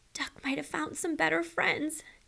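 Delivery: small, sorrowful half-whisper. Narrator reads the cat's line after the duck can't be found, sad little half-whisper. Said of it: "the cat whispered in a sad little voice".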